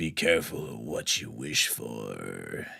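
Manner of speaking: low, slow, super deep impression voice.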